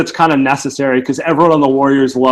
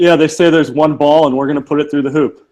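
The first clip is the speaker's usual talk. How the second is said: ordinary talk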